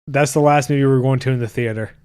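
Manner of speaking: normal talking voice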